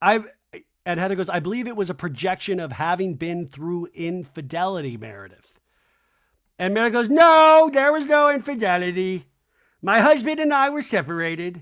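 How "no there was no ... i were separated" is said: heated, loud, high-pitched angry yell. Recounting an argument between Meredith and Heather, retelling Meredith's yell. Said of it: "why are you yelling at me?".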